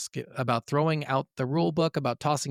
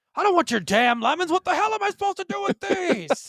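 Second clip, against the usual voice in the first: shrill, high, loud, furious tirade climbing in pitch; 5 dB louder than usual. Repeating the line after being told to get mad. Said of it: "Get mad".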